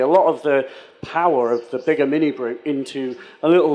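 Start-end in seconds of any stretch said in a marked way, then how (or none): none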